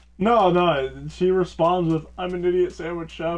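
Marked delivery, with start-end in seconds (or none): 2.2-3.4 put-on sad, wounded, rushed tone. Retelling how she responded when yelled at, imitating a sad, hurt tone. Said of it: "in like a very like sad, like hurt tone".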